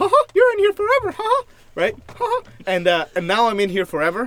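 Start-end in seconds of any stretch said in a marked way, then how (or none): 0.0-1.4 cartoon voice pushed high and loud. Imagining an announcement trapping riders on the ride: Mickey Mouse voice. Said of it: "I can't do the voice unless my arms are out".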